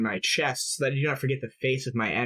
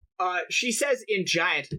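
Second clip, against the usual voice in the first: ordinary talk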